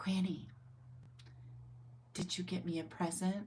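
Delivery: hushed, soft, barely audible whisper. Retelling what Val whispered in her ear, whispering. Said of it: "she whispers in my ear".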